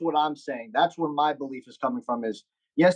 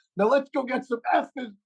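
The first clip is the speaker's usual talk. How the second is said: put-on screaming voice, pitched higher; 9 semitones higher than usual. Retelling a Hard Knocks clip: imitating Rex Ryan screaming. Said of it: "he just screams".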